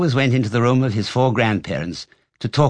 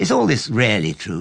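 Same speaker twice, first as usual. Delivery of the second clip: ordinary delivery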